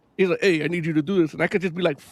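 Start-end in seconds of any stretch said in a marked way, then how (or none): none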